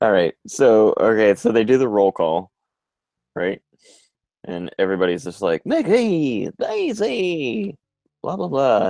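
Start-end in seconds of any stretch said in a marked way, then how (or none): 5.6-8.9 put-on dopey cartoon voice, higher. Retelling the cartoon characters' roll call: Goofy voice. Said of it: "Everybody has Goofy's voice".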